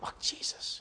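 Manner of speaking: faint, voiceless, weird timid whisper. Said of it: "It was no weird whisper".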